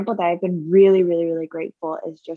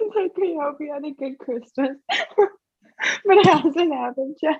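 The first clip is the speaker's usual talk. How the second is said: giggling through words, higher pitch; 9 semitones higher than usual. Explaining a funny idea about the episode order, laughing while talking. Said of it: "So I was laughing".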